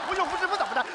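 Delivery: crazed ranting.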